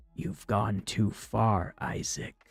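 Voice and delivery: low, rasping voice, almost a whisper. Narrator reads a voice speaking at a man's ear in a quiet tunnel: low raspy near-whisper. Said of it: "low and raspy, almost a whisper".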